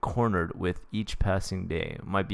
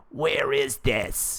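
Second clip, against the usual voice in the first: throaty, guttural, pitched-up cry; 5 semitones higher than usual. Reading a story aloud, a severed head asks: deep guttural voice.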